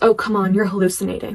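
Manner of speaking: plain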